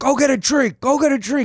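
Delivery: loud, high-pitched, insistent, repeated yelling. Retelling how a drunk comic kept yelling at him: imitating Michael Johnson yelling. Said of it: "still yell at me for being too sober".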